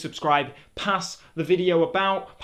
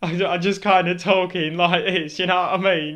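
ordinary delivery

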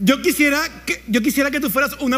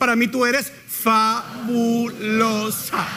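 put-on very slow, drawn-out, as if to a child. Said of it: "te lo voy a decir lentamente para que me entiendas".

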